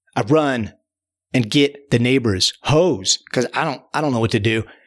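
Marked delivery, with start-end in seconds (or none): none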